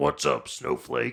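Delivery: loud, rough, creaky ranting voice. Voicing Bigfoot greeting a player, in an Alex Jones voice. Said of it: "he sounds just like Alex Jones".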